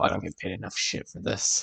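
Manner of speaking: whispered, under-the-breath muttering. Storyteller voices a woman as the group walks in, whispering to herself. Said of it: "she she like whispers to herself".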